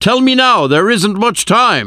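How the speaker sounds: very high, urgent, high-pitched shout. A narrator reads Van Helsing's line to Arthur, shouted. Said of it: "Van Helsing shouted".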